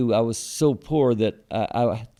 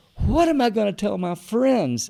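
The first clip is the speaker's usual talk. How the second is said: mock very high-pitched, sobbing, distraught, tearful wail; 10 semitones higher than usual. Retelling his wife's reaction to his news: imitating wife crying and screaming. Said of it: "crying like a little girl and screaming".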